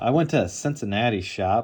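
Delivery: plain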